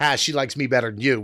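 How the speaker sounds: ordinary talk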